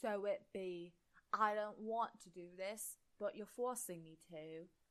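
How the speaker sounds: really bad, terrible fake British accent. Reading out a comment, voicing the man pointing his wand: really bad fake British accent. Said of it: "I'm doing a really bad fake British accent".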